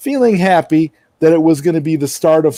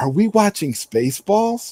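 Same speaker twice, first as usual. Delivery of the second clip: quiet, soft, hushed stage whisper; 4 semitones higher, 5 dB quieter than usual. Retelling what a father said across seats during a movie: imitating dad's half-whisper. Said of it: "my dad whispered across, he's like".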